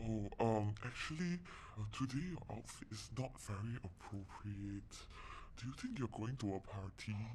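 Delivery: imitated hushed talk. Retelling people taking her aside after morning assembly: imitating hushed voices. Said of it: "speaking in hush hush voices".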